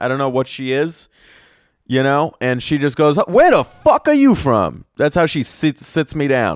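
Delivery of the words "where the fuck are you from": play-acted brash yell, very high, very loud, shrill. Retelling how a bartender greeted him: imitating a very loud bartender. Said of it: "very, very loud".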